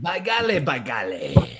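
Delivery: put-on deep, heavy old Southern man's voice and accent. Joking about how a word is pronounced, the speaker says it in an old fat southern man voice. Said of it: "you say it like an old fat Southern man".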